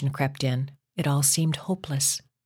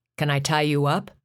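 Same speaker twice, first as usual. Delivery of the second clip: insistent, demanding tone. Narrator voices a man asking Linda that night, demanding. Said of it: "He demanded that night".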